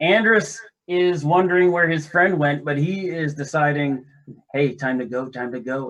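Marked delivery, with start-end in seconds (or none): 4.5-5.9 hushed, whispered voice. Player voicing a fleeing character as he runs past everyone in the hall, whispering. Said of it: "he kind of whispers that as he runs by".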